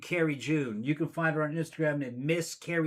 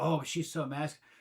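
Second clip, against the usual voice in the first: mocking, put-on whiny voice; 3 dB quieter than usual. Retelling what online guys say about her, imitating them mockingly. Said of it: "And these guys are going".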